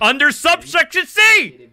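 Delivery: loud, high, heated angry yelling. Reading out a vehicle towing rule: heated angry shouting. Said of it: "I'm heated".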